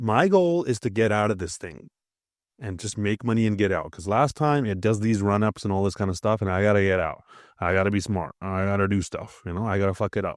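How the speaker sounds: plain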